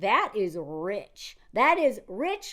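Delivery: put-on slow, smooth, honeyed, old money Southern drawl.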